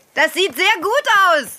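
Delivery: cheerful, eager, unguarded tone. Watching a riding lesson and praising the rider: too loud. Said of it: "Nicht so laut, [name]".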